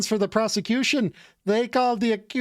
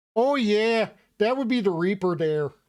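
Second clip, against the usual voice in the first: put-on Irish accent slipping into a Canadian accent. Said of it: "my attempted Irish accent is steadily slipping into Canadian".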